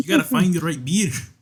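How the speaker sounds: Irish brogue, pitched very high. Retelling a man who talked in an Irish accent at a party, stereotypical Irish accent. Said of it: "he had an Irish accent".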